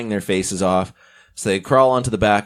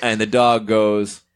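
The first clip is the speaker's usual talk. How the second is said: usual speaking voice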